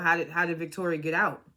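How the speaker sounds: normal talking voice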